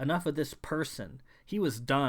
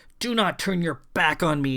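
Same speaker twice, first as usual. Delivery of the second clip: words hissed out, raised hissing voice; 2 semitones higher, 8 dB louder than usual. Reading a story, the narrator voices a woman clinging to a man from behind, hissing. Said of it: "she hissed".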